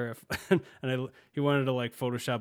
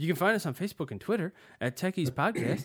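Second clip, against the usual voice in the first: pitched up, cartoon child voice; 5 semitones higher than usual. A podcast host gives listeners the show's social media details, in a Butters voice. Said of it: "I just went into the Butters voice there".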